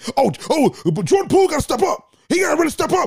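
very high-pitched screaming outburst. Acting out an answer to a very calm basketball question, imitating Stephen A. Smith screaming. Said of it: "what are you screaming for?".

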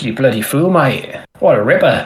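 put-on Australian accent. Retelling what a male duck called out to his mate, Australian accent. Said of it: "he's proper Aussie".

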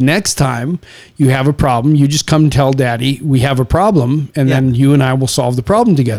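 ordinary delivery

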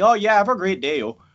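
thick, exaggerated Canadian accent. Imitating a wrestler's voice from his comeback interview: Lance Storm impression, more Canadian. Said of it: "He's like".

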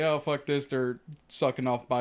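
ordinary delivery

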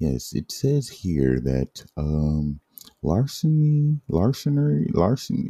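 slow, swooping lawyer voice, stumbling on "larceny". Speaker reads out a charge in court, using a put-on lawyer voice. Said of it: "my lawyer voice".

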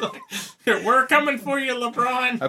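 put-on very high-pitched elderly character voice. Joking about a basketball player pictured dressed as an old person; old person voice. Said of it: "old person impersonation".

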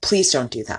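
put-on earnest, tense, tight, serious tone. Retelling a video where the camera man pleads; imitating a tight, serious plea. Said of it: "like please don't like serious".

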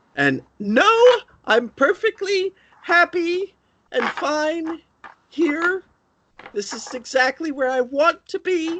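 very high speech through sobs. Character answers visitors who heard her crying; sobbing while talking. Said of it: "she's like sobbing".

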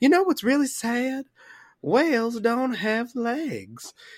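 dim-witted southern drawl, "legs" drawn out. Retelling a player who suddenly stops at a table, southern accent. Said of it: "she's just got this southern accent".

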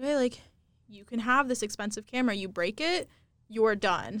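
ordinary talk, nothing marked

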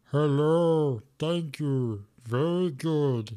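very slow, put-on talking-stone voice. Imitating what the little stones in the game say: imitating the little talking stones. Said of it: "you get the little stones that go".

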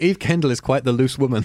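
normal talking voice

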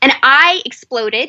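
normal talking voice

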